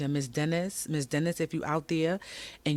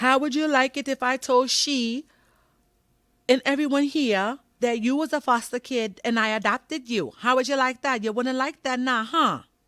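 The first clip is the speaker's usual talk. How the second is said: put-on thick Caribbean accent, loud and high; 9 semitones higher, 6 dB louder than usual. Retelling a woman's reply to the speaker, in a thick caribbean accent. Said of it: "She had a very thick Caribbean accent".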